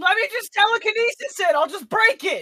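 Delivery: very high, stretched, drawn-out in-character shriek. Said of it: "Midas is gonna start screaming".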